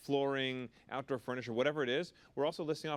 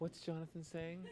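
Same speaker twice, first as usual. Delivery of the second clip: soft, high, dreamy, daydreaming musing; 5 semitones higher, 9 dB quieter than usual. Acting out the women in the crowd watching a man talk, mock-dreamy voice. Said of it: "(DREAMY VOICE)".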